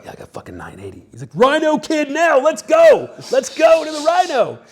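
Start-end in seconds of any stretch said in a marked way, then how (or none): 0.0-1.1 rushed, very quiet, fast hushed whisper. Recalling a big win with the table right there, retelling a whisper. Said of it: "I'm like whispering because the table's right there".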